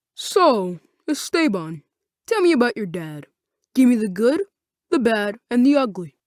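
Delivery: dropped, deep, low voice. Reading a story aloud, voicing a character who questions another, in a deep voice. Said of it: "said in a deep voice".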